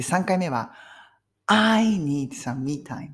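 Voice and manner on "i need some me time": heavy stress on the word I. Japanese-language English lesson, third version of the sentence with stress on I. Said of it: "I にストレスかけましたよね。".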